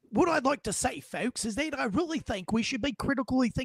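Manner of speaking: put-on Australian accent. Imagining a man appearing on the show, speaker quotes him in an Australian accent. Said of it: "I just went back to Australia".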